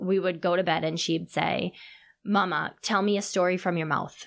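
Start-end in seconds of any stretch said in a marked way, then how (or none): none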